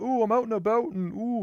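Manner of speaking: high-pitched heavy country Canadian accent. Explaining what country Canadian accents sound like: thick rural Canadian accent. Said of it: "people will have like really thick accent".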